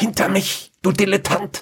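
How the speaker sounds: high-pitched, hissed delivery. A narrator reads her line to him as she gathers her magic, hissed. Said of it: "zischte sie ihn an".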